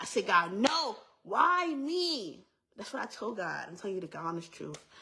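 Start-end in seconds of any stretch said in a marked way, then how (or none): 0.3-2.5 angry, mad, high pitched, very slow and drawn out. Retelling how she answered god: retelling own angry words. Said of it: "And I was mad".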